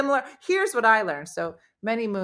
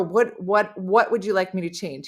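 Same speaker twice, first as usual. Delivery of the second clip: ordinary talk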